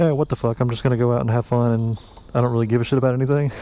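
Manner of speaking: ordinary delivery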